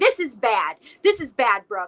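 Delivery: loud, acted-out berating, scolding yell. Retelling a phone call where a caller yelled at her: imitating someone yelling. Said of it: "This woman is yelling at me".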